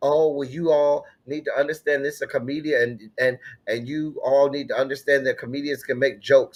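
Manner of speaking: plain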